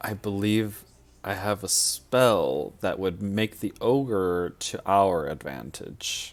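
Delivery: very slow, hushed half-whisper. Speaking in character to the party about a spell: half-whispering to the party. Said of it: "I'm gonna whisper to the party".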